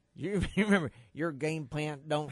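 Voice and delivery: heavy West Texas twang. Retelling what Sammy Baugh said about a 59-0 game, Sammy Baugh West Texas twang. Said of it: "you do the West Texas twang really".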